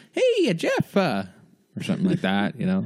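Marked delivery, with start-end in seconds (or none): 0.2-1.0 very high, hesitant voice, pausing on uh. Imitating what an Ellen impression would sound like. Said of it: "An Ellen impression".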